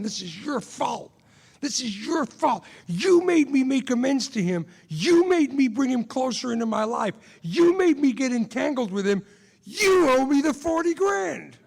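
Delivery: loud, high, enraged, blaming furious scream. Speaker re-enacts screaming at the sponsor, retelling angry screaming. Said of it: "I'm screaming at my sponsor".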